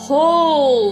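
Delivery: loud, carrying boom, not angry. Narrating people pushing past the sheriff as the Reverend calls out: loud, carrying boom. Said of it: "the Reverend's voice booms, not in an angry way, but just in a loud, carrying boom".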